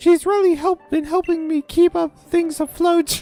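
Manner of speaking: put-on anime girl voice. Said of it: "a vague approximation of Tea's voice from Yu-Gi-Oh! The Abridged series".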